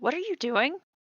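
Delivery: sudden, sharp and very high. Voicing someone who calls out to the approaching party: said sharply. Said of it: "hear a voice sharply to your left just say".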